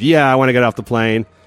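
sarcastic tone of voice. Retelling a passenger's reply to a flight attendant: imitating Seltzer's sarcastic reply. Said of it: "she claims she was so sarcastic".

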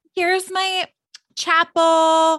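very high-pitched voice. Imitating how a character sounded in a flashback: imitating Erica's high-pitched voice. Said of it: "Her voice was, like, high pitched".

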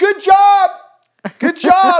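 very high-pitched, drawn-out cheering yell. Retelling how parents in the stands cheered a dropped catch: imitating parents yelling. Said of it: "if you're yelling".

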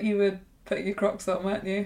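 soft, really sad voice.

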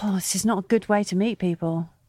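ordinary talk, nothing marked

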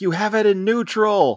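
high yelled delivery. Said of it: "Roman's yelling at him from the dock".

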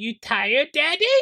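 put-on little baby or toddler voice, way up high. Retelling how a two-year-old reacts to a yawn: imitating Isabella, a toddler. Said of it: "trigger baby behavior in Isabella".

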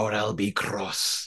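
broadest, thick, put-on Scottish accent. Retelling what he says, in a put-on scottish accent. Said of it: "in his most Scottish accent".

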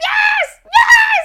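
very high, very loud squealing scream at full pitch. Speaker retells answering after he hugged her and asked for her answer: retelling own screaming. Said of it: "like this, like screaming".

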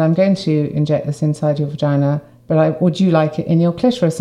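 normal talking voice

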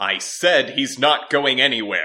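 high, loud, screaming outburst. In a story, John answers the other speaker, screaming. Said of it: "John screamed".

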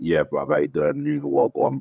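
London street roadman-style accent. Actor showing how he wanted to play his role, London roadman accent. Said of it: "like a roadman from London".

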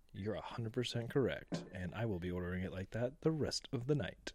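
ordinary delivery

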